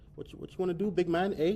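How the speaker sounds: put-on Toronto gangster swagger. Acting out a man confronted by some fans at the end, imitating a Toronto gangster. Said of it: "he gets his like Toronto gangster on".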